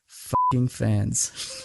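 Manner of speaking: muttered under the breath. Retelling hearing someone's remark to friends: muttered under the breath. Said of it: "I heard him say under his breath to his friends".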